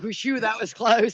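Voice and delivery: slow, shrugging-off tone, worry showing through. Imitating a father hiding worry after a near lightning strike: imitating worried dad. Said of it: "you hear the worry".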